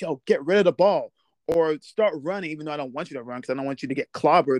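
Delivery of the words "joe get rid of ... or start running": urgent hollering scream. Retelling own shouting at a player during the game: imitating screaming. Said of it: "I'm just screaming".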